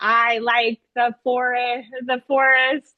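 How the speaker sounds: plain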